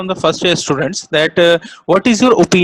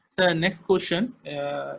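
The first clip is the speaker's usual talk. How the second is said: very soft, slow, faint, barely audible voice. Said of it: "speak louder".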